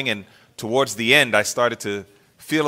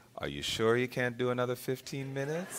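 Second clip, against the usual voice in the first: mock very quiet, soft, tender, kind voice; 14 dB quieter than usual. Retelling how he answered her pleas to get out of the tub: imitating his kind voice. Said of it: "in that kind voice".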